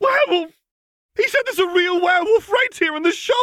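shrill, very high shrieking scream. Someone in the crowd at a shop hears mention of a werewolf, screaming. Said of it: "Someone in the crowd screamed".

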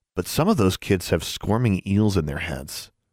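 ordinary delivery

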